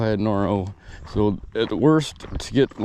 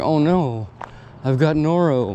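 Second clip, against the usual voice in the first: mock dawning panic, slow, words drawn out; 4 semitones higher than usual. Retelling feeling sick on a hike: retelling own past panic. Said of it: "So immediately start panicking".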